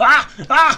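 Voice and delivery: startled, high, loud, panicked screaming.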